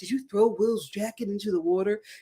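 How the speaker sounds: voice dropped way down, low and deep. Retelling Clayton questioning Peter, in Clayton's low voice. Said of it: "in that low voice".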